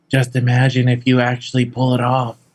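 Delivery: whispered aside. Speaking in character from behind another character: whispering. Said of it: "She whispers behind you and says".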